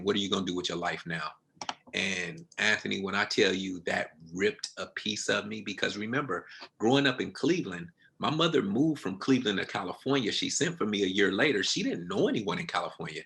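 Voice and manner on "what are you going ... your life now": put-on tearful crying voice, lower and quieter. Retelling a mother going to her room after bad news: imitating someone crying. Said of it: "I remember her crying and going to her room saying".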